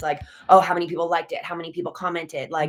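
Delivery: ordinary talk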